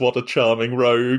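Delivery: plain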